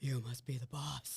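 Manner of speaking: very deep, low voice, dropped register. Retelling what a man at the VIP restroom said to the speaker, in a very deep voice. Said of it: "with a very deep voice and goes".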